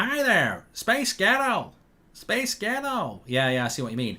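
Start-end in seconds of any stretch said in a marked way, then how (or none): 0.0-3.2 slow, unhurried, deliberate put-on American accent. Saying a listener's name as requested, american accent.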